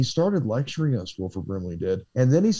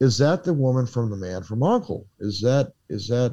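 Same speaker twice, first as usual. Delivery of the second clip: usual speaking voice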